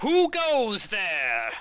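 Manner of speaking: very high, swooping, booming, shrill crone voice. Game master voicing an unseen figure as the players approach the quarry, loud booming voice. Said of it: "you hear this loud voice boom out from it".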